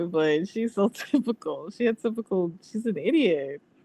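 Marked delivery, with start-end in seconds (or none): 0.1-1.7 talking through laughter. Mocking someone in conversation, laughing while talking. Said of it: "I'm sorry for laughing".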